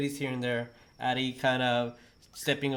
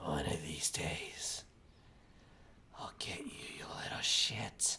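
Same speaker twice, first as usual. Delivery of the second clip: put-on hushed, whispered old hag voice; 8 semitones lower, 11 dB quieter than usual. Narrator voices a hag whispering inches from the listeners' ear, hag's whisper. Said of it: "you hear her whisper".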